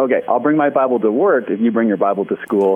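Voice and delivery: ordinary delivery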